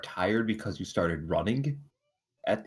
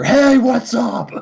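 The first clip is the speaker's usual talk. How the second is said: close, intimate whisper, pitched higher; 13 dB louder than usual. Acting out a character walking up close to another: whispering in someone's ear. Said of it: "And I whisper in your ear".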